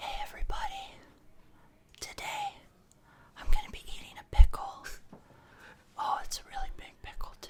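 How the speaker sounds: whispered, breathy, close-to-the-mic ASMR voice. Imitating an asmr video of someone eating a pickle: imitating an asmr video voice. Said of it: "I'll get close so y'all can get the experience".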